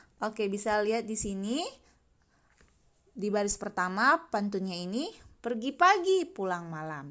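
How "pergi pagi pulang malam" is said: high intonation on pagi. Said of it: "pada kata pagi Ustazah berikan intonasi tinggi".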